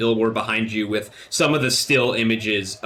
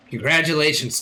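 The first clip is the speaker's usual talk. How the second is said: put-on high goblin voice; 5 semitones higher than usual. Voicing a character congratulating the players in a retake: goblin voice. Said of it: "that was a goblin".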